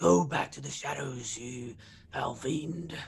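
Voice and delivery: whispering in a put-on character voice. Casting a spell on a foe in character: whispering in character. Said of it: "I'm gonna have to whisper".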